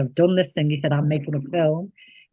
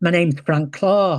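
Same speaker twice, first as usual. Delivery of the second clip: put-on Liverpool accent. Retelling a phone call where a caller introduces himself, Frank Clarke's Liverpool voice. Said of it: "in a really sort of Liverpool voice".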